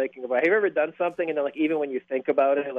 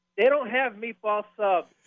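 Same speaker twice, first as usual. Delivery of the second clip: loud, high admonishing scolding tone, acted out; 8 semitones higher than usual. Recounting a man behind the speaker in line who corrected them: retelling a man's loud scolding. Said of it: "Very loud. Admonished me".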